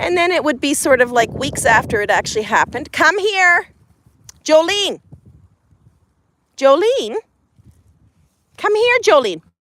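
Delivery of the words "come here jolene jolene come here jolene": high, loud, calling-out yell. Talking into the phone, the speaker calls Jolene to come here, yelling. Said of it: "I'm yelling into the phone".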